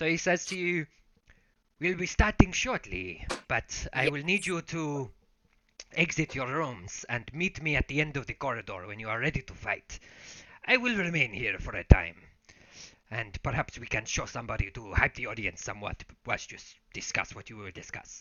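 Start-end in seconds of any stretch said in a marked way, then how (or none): 1.8-18.2 sinister put-on Spanish accent. A game master voices a character addressing the players, creepy Spanish-accented voice. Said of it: "He's like creepy, but in a Spanish way".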